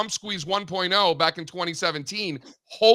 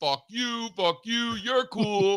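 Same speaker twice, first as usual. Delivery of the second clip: laid-back, slow, drawn-out cool-guy drawl; 4 semitones higher than usual. Quoting a scene from Half-Baked: imitating the Half-Baked guy. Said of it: "that guy in Half-Baked where it's like".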